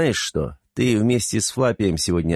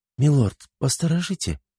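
pitched-up, polite delivery; 7 semitones higher than usual. The red-haired woman asks Anton to keep watch, asking quietly. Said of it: "тихо попросила рыжая".

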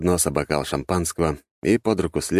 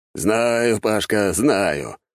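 said with an audible smirk; 3 semitones higher than usual. Narrator reads a major answering an offended captain, smirking. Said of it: "усмехнулся он".

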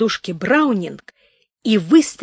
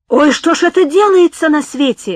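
high, loud, cried-out exclamation; 7 semitones higher, 6 dB louder than usual. Reading the innkeeper's response on hearing about the shot dog, crying out. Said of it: "закричал корчмарь".

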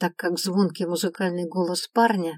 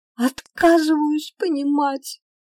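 hard, high-pitched shout; 9 semitones higher, 4 dB louder than usual. Narrating fiction, an elf replies to the one who just spoke to him; shouted. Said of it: "закричал эльф".

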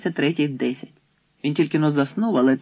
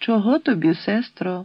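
kindly, gentle, higher pitch; 6 semitones higher than usual. An old hostess greets a silent visiting woman; gentle question. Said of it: "лагідно запитала бабуся".

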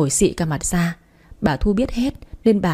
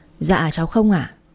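usual speaking voice

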